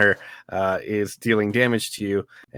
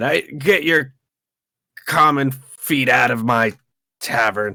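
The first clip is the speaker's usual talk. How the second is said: character shouting, higher-pitched and louder; 4 semitones higher, 5 dB louder than usual. Voicing a character who climbs out of webbing: character yelling. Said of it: "and just yells at Ryan".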